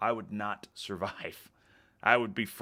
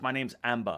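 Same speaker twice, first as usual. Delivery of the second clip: put-on Australian girl's accent; 2 semitones higher than usual. Retelling an australian girl from a video saying her name, imitating an australian accent. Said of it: "She was Australian".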